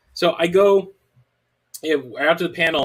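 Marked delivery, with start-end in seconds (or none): none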